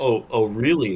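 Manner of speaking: loud, sarcastic, dismissive disbelief. Speaker demonstrates a sarcastic, dismissive reply. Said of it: "sarcastic, dismissing".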